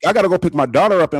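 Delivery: loud, fast, upset, rushed delivery.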